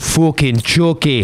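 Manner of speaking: put-on high, angry, furious toddler voice. Retelling a funny story, acting out how a tiny child answered her mom's question, imitating an angry little girl. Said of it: "an angry little 2-year-old girl saying fucking Chucky".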